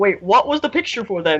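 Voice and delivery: ordinary delivery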